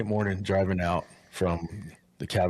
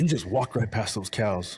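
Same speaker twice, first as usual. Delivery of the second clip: upset, complaining grumble; 3 semitones higher than usual. Retelling what the hunter said: imitating an upset hunter. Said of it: "the hunter gets all upset".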